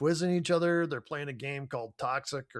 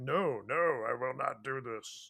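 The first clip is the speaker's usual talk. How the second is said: slow, grating, irritating put-on voice; 5 dB quieter than usual. Retelling how Jaden refuses to make a speech: Jaden impression. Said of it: "that was a good impersonation".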